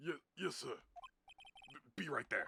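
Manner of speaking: put-on grumbling, disgruntled Brooklyn accent, swooping high. Voicing a game character in a voice the speaker chose: disgruntled Brooklyn dude voice. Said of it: "Just like like disgruntled like Brooklyn dude".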